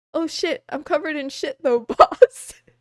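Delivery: loud, words broken up by laughter. Retelling what the speaker told the boss back then, laughing while talking. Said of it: "I keep laughing".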